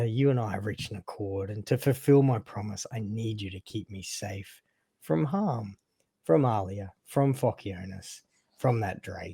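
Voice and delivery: sinisterly friendly, insidious coaxing tone. A character addresses the listener, asking for protection, in an insidious, friendly tone. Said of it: "this insidious, uh, friendly tone that".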